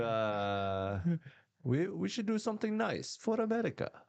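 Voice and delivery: high-pitched put-on Arabic accent. Showing the accent he uses in his act: Arabic accent. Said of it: "I do an Arabic accent in my act".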